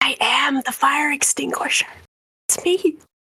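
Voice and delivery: voiced, in-character stage whisper. Whispering to Agave in character, claiming to be the fire extinguisher: whispering in character. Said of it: "whispers to Agave".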